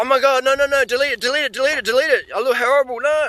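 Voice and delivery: frantic, panicked voice at a very high pitch. Retelling a girl's reaction after seeing the footage: imitating someone freaking out. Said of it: "And she's freaking out".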